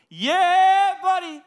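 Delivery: put-on hyped-up, very high, loud five-year-old yell.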